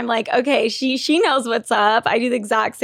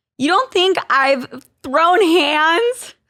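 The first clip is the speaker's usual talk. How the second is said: high, put-on Valley Girl accent; 5 semitones higher than usual. Talking about her blackout alter ego, she asks this in her valley girl voice. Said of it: "My Valley Girl voice saying throw hands".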